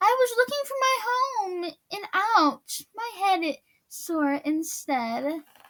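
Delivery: small, wee, high-pitched storybook voice. Reading the story, the narrator voices Little Turtle after he pops from the mud: Little Turtle's tiny voice. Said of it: "with his tiny voice he said".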